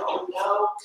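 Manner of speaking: high, soft, weak, sickly whimpering voice. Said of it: "I can hear it in her voice".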